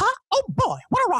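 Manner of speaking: very high, squeaky little cartoon mouse voice. Showing the impressions they do: Mickey Mouse voice. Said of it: "I do, like, Mickey Mouse".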